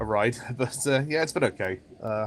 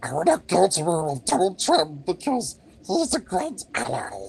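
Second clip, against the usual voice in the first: high, twisted little creature voice, pitch swinging wildly; 6 semitones higher than usual. Joking about what he would say, Gollum voice. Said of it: "Do a Gollum impression".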